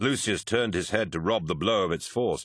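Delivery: plain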